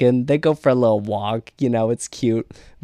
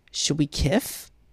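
put-on, deliberate lisping baby talk; 4 semitones higher, 6 dB quieter than usual. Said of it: "Forest Boy did it with a lisp".

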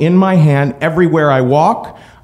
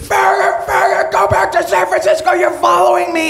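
frantic, very high, shrieking scream. Retelling a man on the street coming at them, retelling a man screaming. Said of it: "He starts screaming".

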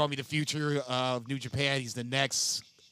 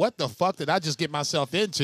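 ordinary delivery

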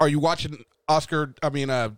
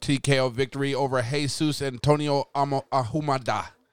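plain

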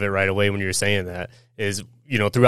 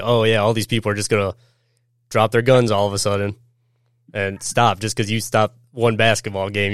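ordinary delivery

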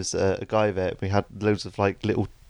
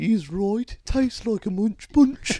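very high, terrible put-on Birmingham accent; 13 semitones higher than usual. Recalling a tasting, the speaker quotes a voice from the back of the room: Brummy accent. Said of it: "this Brummy voice from the back of the room say".

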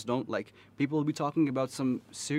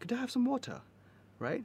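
fake British accent, very high pitch, fast; 12 semitones higher than usual. Mocking kids at KGS who think they're Brits, in a fake British accent. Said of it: "thinking they're Brits".

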